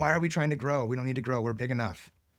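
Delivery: half-yelled, held-back outburst. Recalling a sales meeting, quoting a speaker there: imitating someone yelling. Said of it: "some yelling".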